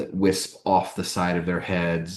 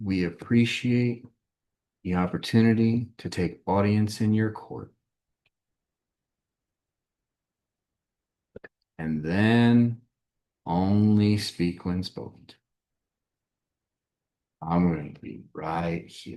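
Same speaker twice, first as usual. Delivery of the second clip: whispering; 3 semitones higher than usual. Voicing a character advising the group as they approach: whispering. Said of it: "Alexis kind of whispers to the".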